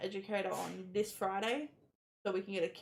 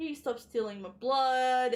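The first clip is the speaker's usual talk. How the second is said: play-acted, high, loud sarcastic kid's jab; 5 semitones higher, 6 dB louder than usual. Retelling a son's joke about nurses taking his blood: imitating a sarcastic child.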